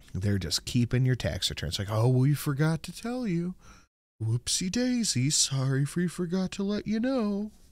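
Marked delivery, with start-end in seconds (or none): 1.9-7.5 slow, dragging, drawn-out cartoon donkey voice. Mocking the government's excuse about keeping tax returns: Eeyore voice. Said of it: "You went a little Eeyore there".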